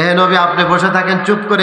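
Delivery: normal talking voice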